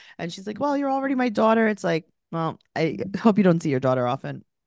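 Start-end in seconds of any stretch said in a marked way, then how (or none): 0.6-1.7 tearful, weepy, high-pitched crying voice. Retelling what the crying mother said; imitating the mother crying. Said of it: "The mother's crying".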